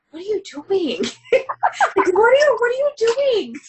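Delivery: high, scared, baffled, pitch climbing up. Retelling reacting while reading a scene: imitating own scared reaction. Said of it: "I'm so scared".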